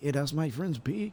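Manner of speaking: put-on Spanish accent.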